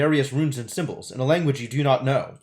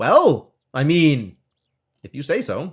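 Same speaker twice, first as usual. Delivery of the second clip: ordinary delivery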